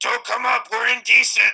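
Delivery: very loud, very high, rough shout. In a tabletop game, a player's character shouts a warning through the doorway, shouting. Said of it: "Orgle's just gonna shout".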